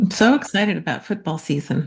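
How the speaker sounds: dry, sarcastic tone. Replying to a remark about the start of football season: sarcastic. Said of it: "unfamiliar with sarcasm".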